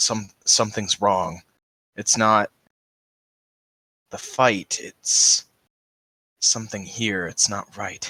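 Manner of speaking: hushed whisper, under the breath. Playing a character locked in a fight, whispering to the opponent: whispering in character. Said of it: "I whisper to him".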